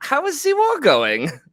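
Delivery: very high-pitched, put-on German accent. Putting on an act, a man catches himself and speaks in a German accent as Hitler. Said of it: "at first forgetting to do a German accent, but then he catches himself".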